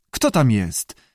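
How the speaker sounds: plain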